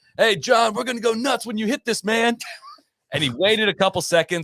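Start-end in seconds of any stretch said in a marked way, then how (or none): 0.2-2.4 put-on rowdy heckling yell, high-pitched. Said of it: "dumb things that are yelled at you".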